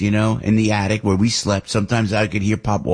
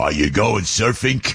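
put-on tough Brooklyn accent, hard K sound on "surfing". Imitating his father from Brooklyn talking to him, Brooklyn accent. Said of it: "he put the K on surfing, you know, because he's from Brooklyn".

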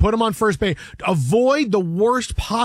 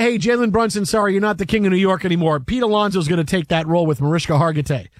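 plain

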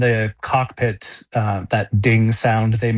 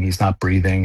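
usual speaking voice

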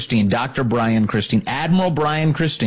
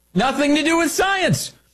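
very high-pitched mocking put-on voice. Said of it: "Here's what he said".

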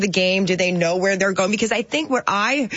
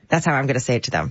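usual speaking voice

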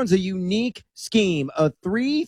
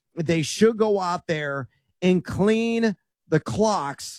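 very slow, careful delivery. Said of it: "I gotta say that slowly".

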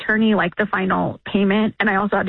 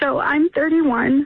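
slow, tearful voice, holding back tears. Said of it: "I didn't want to get emotional".

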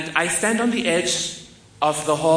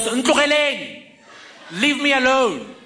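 acted-out yell, high and swooping; 8 semitones higher than usual. Retelling how she yelled out the window at a car, retelling a yell. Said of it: "and yells".

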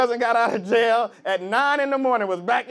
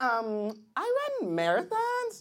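put-on, swooping, sing-song voice; 9 dB quieter than usual.

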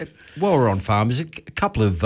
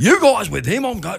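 high-pitched cranky barkeeper voice. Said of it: "he was pissed off, like, he was cranky as".

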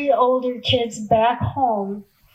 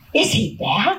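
play-acted, startled, caught off guard, surprised. A young boy looks up as the narrator greets a neighbor: startled. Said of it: "In a startled voice".

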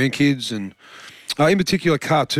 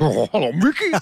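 cartoon character voice; 2 semitones higher than usual. Answering whether the role in a school play was voiced: Goofy voice. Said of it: "Did you talk like him?".

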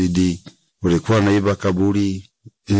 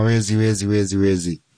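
ordinary delivery

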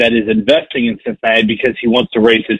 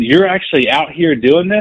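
put-on yelling, calling out; 5 semitones higher than usual. Retelling meeting a passer-by while door knocking: imitating someone yelling.

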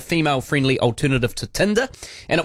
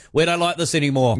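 ordinary talk, nothing marked

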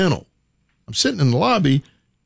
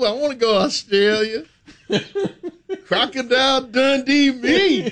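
mock excited fan voice, higher; 11 semitones higher than usual. Acting out the other speaker at a concert, hands up: imitating the other speaker as a fan. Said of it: "You got your hands up".

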